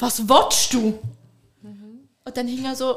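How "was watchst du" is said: mock-irritated, put-on annoyed delivery. Retelling the third time someone interrupted, replying annoyed. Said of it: "beim dritten Mal war ich dann so genervt".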